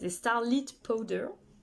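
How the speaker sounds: "starlit powder" said with an English accent. Presenter naming a product while demonstrating it to viewers, with an English accent. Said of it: "avec l'accent anglais".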